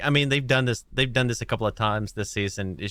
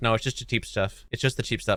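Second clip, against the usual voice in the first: ordinary talk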